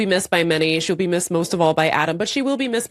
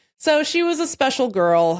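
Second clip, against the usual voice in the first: plain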